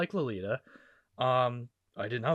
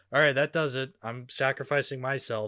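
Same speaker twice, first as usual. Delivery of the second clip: usual speaking voice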